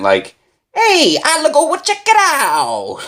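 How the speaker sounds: put-on very high, swooping, very thick Italian accent. Retelling a scene where Tony offers to go check it out, thick Italian accent. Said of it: "he says it with like a way thicker Italian accent".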